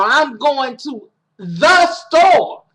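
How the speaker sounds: the word the said with heavy stress. Explaining what emphasis changes in a sentence, stress on the. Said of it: "the putting emphasis on the means that there's only one store I'm going to".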